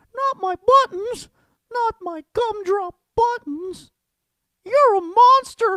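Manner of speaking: loud, shrill, pitched way up. Doing character impressions one after another, as the Gingerbread Man from Shrek. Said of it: "the gingerbread cookie guy from Shrek".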